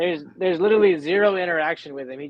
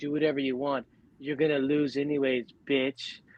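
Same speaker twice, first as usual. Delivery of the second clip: soft, totally unbothered, unworried calm; 5 dB quieter than usual. Retelling a comic scene where Kang taunts Eddie: soft unworried Kang voice. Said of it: "the soft-ass tone, like, he's not even worried".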